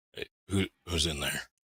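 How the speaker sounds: soft, quiet, hushed voice. Gently knocking on a door and speaking through it: quiet voice. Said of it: "quietly, try and say through it".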